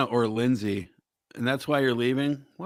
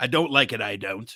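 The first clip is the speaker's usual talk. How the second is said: mocking English voice; 2 semitones lower than usual. Mocking how Wayne repeats himself at sentence ends: imitating Wayne's English speech. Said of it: "He'll tell you he doesn't like something".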